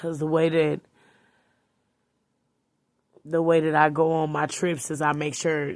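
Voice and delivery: tearful, crying speech. Telling listeners about planning annual trips, crying while talking. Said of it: "I'm sorry for crying".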